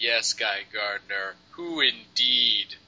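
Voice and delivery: super creepy, ominous voice. Retelling a comic issue, the speaker voices the Guardians answering: creepy Guardians voice. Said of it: "the Guardians super creepily say".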